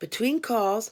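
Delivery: ordinary delivery, nothing marked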